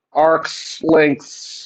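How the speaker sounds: arcs lengths sounded out very slowly, drawn out. Explaining why s stands for arc length, drawing out arc length slowly. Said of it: "if you just sound out arc length very slowly".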